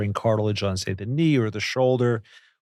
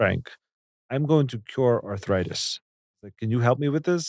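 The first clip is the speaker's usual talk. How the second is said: put-on strong Russian accent. Recounting a stem cell expert walking into his office, quoting him: strong russian accent. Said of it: "in a very strong Russian accent".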